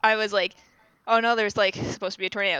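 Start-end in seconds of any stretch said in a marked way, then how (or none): none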